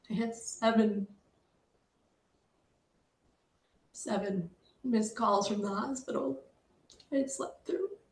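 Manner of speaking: choked up, voice breaking, holding back crying. Recounting waking to missed calls from the hospital: holding back tears. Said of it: "I'm trying not to cry".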